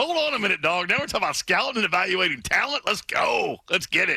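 amped-up hype, pep in the step, high and swooping. Teasing the other speaker by imitating him getting amped up. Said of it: "you get a little pep in your step".

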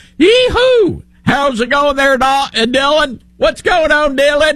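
put-on very high, heavy, thick Southern accent. Speaker mimics a man whose accent is stronger than their own, greeting Dylan: thick Southern accent. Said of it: "I have a Southern accent, but he's like".

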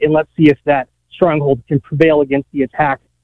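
ordinary delivery

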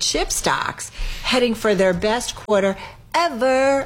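put-on high, drawn-out, gushing Valley girl voice.

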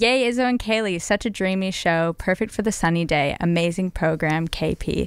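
ordinary talk, nothing marked

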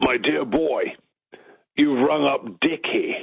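big, full voice kept mild and restrained. A new reporter retells who answered his phone call, booming Richard Attenborough voice. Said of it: "This booming voice comes back and it says".

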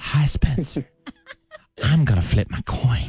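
seductive, hushed, slow, sultry whisper. Teasing a co-host by copying her: imitating a sultry whisper. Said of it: "she likes being sultry".

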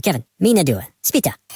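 put-on cartoon gibberish voice. Talking about the Minions, the speaker shows how they talk, in a Minion voice. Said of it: "They talk like this".

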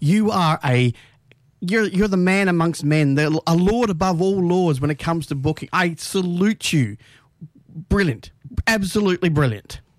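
dry, sarcastic praise. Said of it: "I can tell the sarcasm in your voice".

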